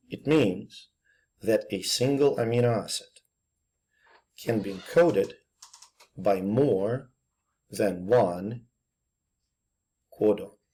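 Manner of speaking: very slow, deliberate, halting, word-by-word delivery. Speaker tells listeners to listen very carefully, then speaks very slowly. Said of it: "I'm going to say it very, very slowly".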